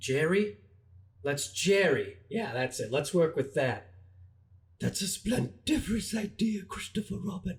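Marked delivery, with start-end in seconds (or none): 4.8-7.6 high-pitched cartoon bear voice. Answering a name suggestion in a Winnie the Pooh voice. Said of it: "Winnie Winnie the Pooh?".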